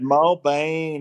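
Australian accent impression.

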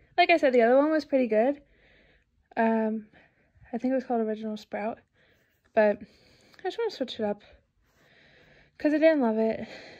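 out of breath, winded. Updating the audience about switching shampoos, speaker talks out of breath. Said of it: "I'm also out of breath".

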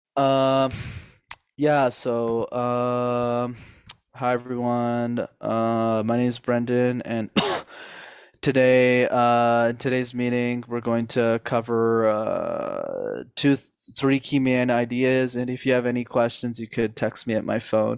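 hesitant, halting, unconfident delivery. Showing a meeting audience a weak leader's opening: hesitant, unconfident leader delivery. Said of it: "leader A sounds something like this".

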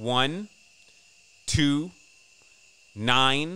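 very slow, deliberate, spaced-out dictation. Dictating numbers for listeners to write down, saying it slow. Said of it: "I'll say it slow".

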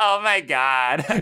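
exaggerated, obnoxious California woman accent. Describing their least favorite woman voice, in a California accent. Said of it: "least favorite woman voice, probably like the California, like".

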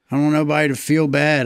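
usual speaking voice

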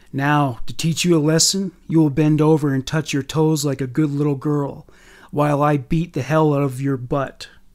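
plain reading voice

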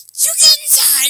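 very loud, high-pitched, shrieking yell. Recalling the mother calling the speaker in from the sandbox, imitating mom yelling. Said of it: "That's how she sounds".

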